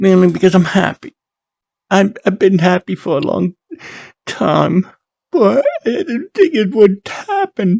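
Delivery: crying through happy words. Opening a video called Hope: crying from happiness. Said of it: "I'm crying".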